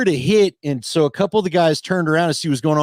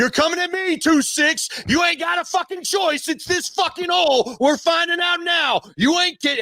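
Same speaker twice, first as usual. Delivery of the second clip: very high, frothing, worked-up yell; 13 semitones higher than usual. Retelling an opponent's taunt across the line: imitating Al Wilson yelling. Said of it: "he's yelling the whole snap count".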